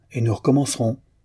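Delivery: ordinary delivery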